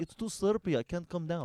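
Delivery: put-on Russian-accented English. Retelling what a woman said to Todd, imitating a Russian accent. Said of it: "That's Russian for slippery".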